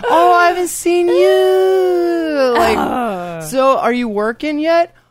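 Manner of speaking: very high, loud, sugary put-on smile voice. Acting out a lady running into someone's mom and asking questions, fake smile voice. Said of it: "The fake smile voice".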